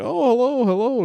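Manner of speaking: delighted, excited, welcoming, very high voice. Voicing a shopkeeper greeting arriving adventurers: excited Valak voice. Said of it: "he's very excited to see you".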